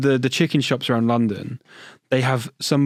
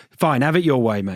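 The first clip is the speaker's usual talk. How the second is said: normal talking voice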